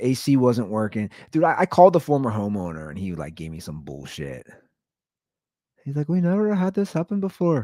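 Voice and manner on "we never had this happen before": very high, terrible fake Indian accent. Speaker quotes the former homeowner's excuse about the broken AC: bad Indian accent. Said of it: "That was a terrible Indian accent".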